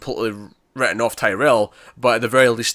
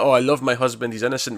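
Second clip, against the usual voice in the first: staged, showy, heartfelt emotional delivery. Mimicking a TV character's staged speech about her husband: imitating an emotional speech. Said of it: "her emotional speech".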